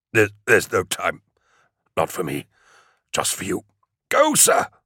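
raspy, straining, pitched high with pain. Narrator reads a bleeding man urging the one lifting him to go, raspy, high with pain. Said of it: "Sim rasped, his voice high with pain".

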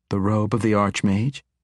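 plain reading voice

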